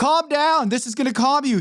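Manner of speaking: shrieking tyrant mother voice, very high, screaming. Reviewing an episode, acting out a woman screaming at her daughter: mock screaming. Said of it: "screaming at her daughter".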